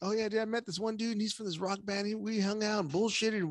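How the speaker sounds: very high-pitched, chill, laid-back Los Angeles bro voice. Imitating cousins from L.A. bragging about meeting a band: imitating an L.A. cousin. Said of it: "where they're always all like".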